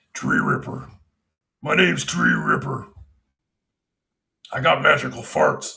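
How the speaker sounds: rough character voice with a creaky edge. Wanting to do his Dungeons and Dragons voices, in a Tree Ripper D&D voice. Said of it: "all my Dungeons and Dragons voices".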